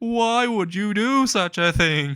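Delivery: play-acted, very high, sobbing cry of pain. Voicing a character on the ground after a punch: crying in pain. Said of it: "he's in pain, just crying".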